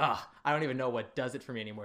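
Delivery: irritated, annoyed, fed-up complaining with an ugh. Retelling a father's complaint after the show, imitating an annoyed dad. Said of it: "he was so annoyed".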